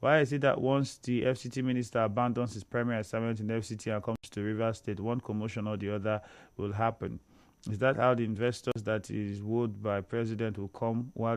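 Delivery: plain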